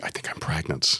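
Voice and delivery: soft, hushed, breathy whisper. Retelling what the woman whispered during the cat rescue: imitating a whisper. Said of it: "she just whispered to me".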